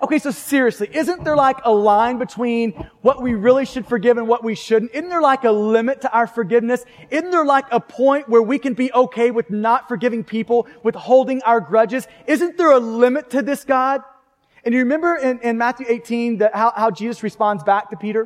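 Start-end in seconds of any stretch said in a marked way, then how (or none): none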